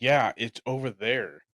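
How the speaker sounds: put-on annoyed tone. Retelling how a man answered someone asking for pizza, imitating an annoyed reply. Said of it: "he got so annoyed".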